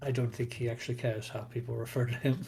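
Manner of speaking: hushed half-whispered aside under the breath. Voicing a character muttering as the players walk back: half-whispering. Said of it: "You hear him whisper and goes".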